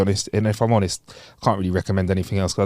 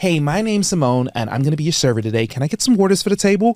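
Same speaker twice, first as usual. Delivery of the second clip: put-on American accent, waiter-style voice; 7 semitones higher than usual. Imagining a server coming over to greet the table, american server accent. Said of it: "I want an American accent as well".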